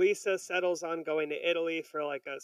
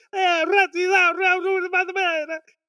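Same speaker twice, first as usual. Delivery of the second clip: very high, very loud, drawn-out furious fake-Italian screaming; 14 semitones higher, 11 dB louder than usual. Retelling a cartoon scene: imitating Lisa screaming in Italian. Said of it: "she starts fucking screaming at him, all in Italian".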